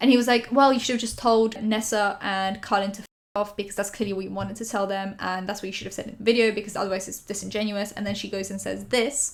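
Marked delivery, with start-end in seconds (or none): none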